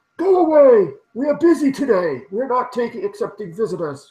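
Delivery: muffled, very high shout. Storyteller voices someone inside answering the players' knock, muffled voice behind door. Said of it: "you hear a muffled voice say".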